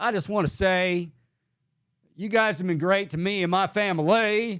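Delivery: Southern drawl. Imitating the LSU coach addressing fans, Brian Kelly Southern drawl. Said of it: "Forrest Gump over here".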